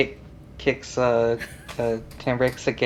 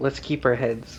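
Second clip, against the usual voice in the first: hushed half-whisper in character voice; 4 dB quieter than usual. Half-whispering to a companion while leaning him down: half-whispering in character. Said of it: "just whispering".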